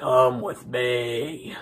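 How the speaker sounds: low, eerie, sinister voice with "me" drawn out. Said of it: "he's just all creepy".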